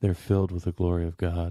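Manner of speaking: low, dead-serious, matter-of-fact deadpan delivery. Retelling what a bandmate said with a dead straight face: imitating a deadpan delivery. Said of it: "with the dead straight face".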